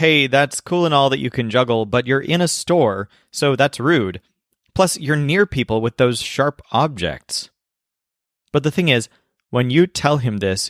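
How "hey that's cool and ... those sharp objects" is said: plain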